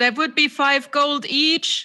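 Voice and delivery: very loud upward yell. In a tabletop game, a player's character calls out: yelling up. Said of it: "I yell up".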